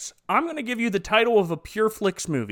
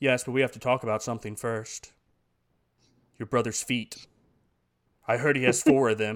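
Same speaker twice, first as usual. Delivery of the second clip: low, soft, serious voice. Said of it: "Jesus turns around all serious".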